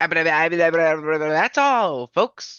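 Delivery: "That's" stretched out and stumbled over. Urging a friend to do the catchphrase properly, showing how: Porky Pig impression. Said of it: "do a Porky Pig impression".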